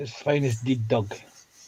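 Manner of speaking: Scottish dialect pronunciation. Showing how a phrase sounds in Scottish dialect, in a Scottish accent. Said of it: "in the Scottish dialect".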